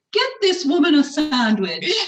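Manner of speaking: grand, very posh, high-pitched, swooping voice. Retelling what a young girl said about a lunchtime visitor, in a very posh voice. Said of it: "in a very posh voice".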